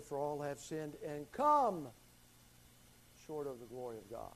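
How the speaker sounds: the word COME given strong stress.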